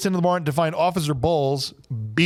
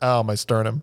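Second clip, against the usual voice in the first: mock nonchalant, unbothered, offhand grumbling tone; 5 semitones lower than usual. Retelling a movie scene, a hit character's reaction: imitating a nonchalant complaint. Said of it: "very nonchalantly puts his hand to his chest like".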